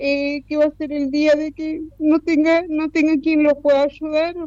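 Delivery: high-pitched voice, choked up with emotion.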